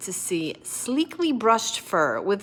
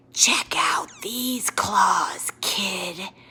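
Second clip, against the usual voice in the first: raspy, swooping monster voice. A third voice from under the bed addresses the kid, raspy monster voice. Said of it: "a third voice from under the bed rasped".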